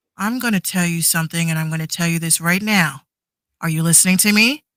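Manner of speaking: put-on authoritative voice of authority. Acting out Mima getting a child to listen, imitating an authoritative voice. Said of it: "You have to have authority in your voice".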